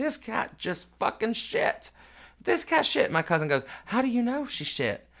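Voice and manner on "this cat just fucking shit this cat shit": mock-screaming in a much higher pitch. Speaker retells the car ride with the cat by grandma's feet; retelling own screaming. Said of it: "I'm screaming out".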